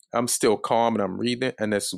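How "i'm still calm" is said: ordinary delivery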